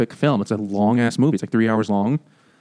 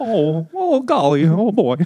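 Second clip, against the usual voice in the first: put-on very slow, drawn-out, slightly high old-movie voice; 9 semitones higher than usual. Joking about Jimmy Stewart in a Christmas movie: Jimmy Stewart impression. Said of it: "That's my Jimmy Stewart".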